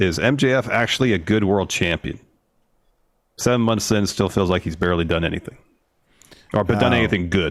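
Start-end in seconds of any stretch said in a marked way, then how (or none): none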